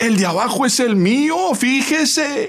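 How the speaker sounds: very loud, very high, shrill protesting tone. Narrating a bus scene, a woman stepped on by a man says it very loudly. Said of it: "en voz muy alta dijo".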